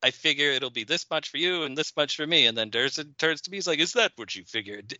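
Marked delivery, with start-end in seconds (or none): 3.8-4.9 western movie-star voice. Acting out Durson's reply about splitting a bootleg CD, quoting Young Guns in a James Coburn voice. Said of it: "in a James Coburn voice".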